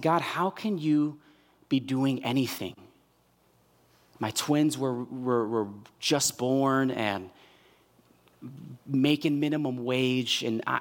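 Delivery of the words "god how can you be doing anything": tearful, crying voice. Retelling a past prayer to God at work: retelling a tearful cry. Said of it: "I started bawling. I started crying because I said".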